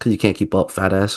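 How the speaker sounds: mock muttering under breath. Retelling what a player muttered under his breath: imitating someone muttering under breath. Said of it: "heard one dude mutter and call me a fat ass under his breath".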